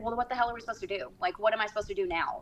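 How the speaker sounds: mock-angry outburst. Retelling how a man got super pissed at the speaker, acting out his anger. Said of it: "he got super pissed and basically was like".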